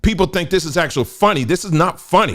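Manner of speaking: high, loud, heated ranting delivery. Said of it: "I'm getting a little heated".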